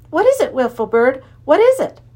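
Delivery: gasping. Narrator reads Tom speaking to the Wiffle Bird on his shoulder, gasping. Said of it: "he gasped".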